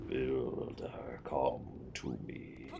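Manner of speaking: very slow, quiet, eerie, spooky whisper. A mysterious voice calls the Builder from the mine entrance: spooky voice. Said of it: "What the heck was that spooky voice?".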